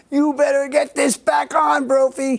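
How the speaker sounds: high-pitched, slowed-down yelling.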